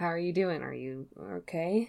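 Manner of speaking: hushed whisper. A character leaning down to check on another while walking back, whispering. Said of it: "lean down and whisper".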